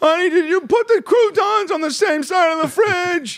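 very high-pitched voice, taken way up. Acting out the man who took Seinfeld's voice, talking to his wife: Seinfeld voice. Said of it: "There's a guy out there right now like".

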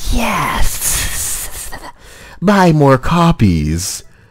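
high, hissing snake voice. Voicing what J.K. Rowling says, J.K. Rowling as a snake. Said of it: "Rowling speaking like a snake".

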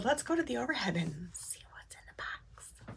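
soft, hushed, teasing whisper. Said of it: "I need to stop whispering".

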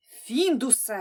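sharp, curt, snapped-out delivery. Grandpa scolds Findus after the hens panic about being locked up; snapping. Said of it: "ферескнув дідуню".

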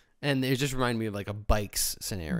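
ordinary talk, nothing marked

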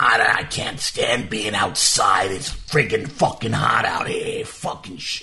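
put-on slow, grumbling old man voice. Showing the voice he invents for people seen from the car, made-up old passerby voice. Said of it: "I'll make a voice for them".

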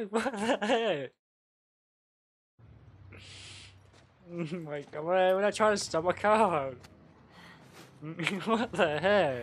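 talking through helpless, uncontrollable laughter. Speaker who keeps laughing and can't stop, can't stop laughing. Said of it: "why I can't stop laughing?".

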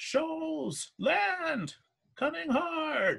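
very high, rough near-scream, "land" stretched out. A crewmate on lookout up the mast calls out, almost screaming a warning. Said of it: "almost screaming out".

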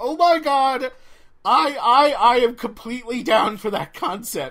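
loud, drawn-out, thrilled, all-in excitement. Reacting to a comic's road-trip concept: excited. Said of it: "you can probably hear it in my voice".

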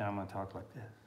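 quiet, embarrassed tone.

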